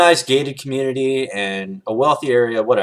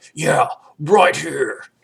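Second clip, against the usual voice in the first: odd, demented, unhinged little monster creature voice; 4 semitones higher than usual. Retelling a strange guy answering while the speaker drives, in demented Cookie Monster voice. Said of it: "and a weird little voice. It was like the Cookie Monster".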